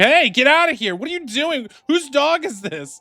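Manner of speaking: shouting angrily. Voicing a tent owner as a dog bursts in: shouting angrily at a dog. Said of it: "she starts shouting and throwing stuff at you".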